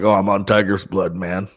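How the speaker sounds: spaced-out, wasted, boastful party-star voice. Retelling a celebrity's wild era, imitating Charlie Sheen. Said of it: "that era where he's like".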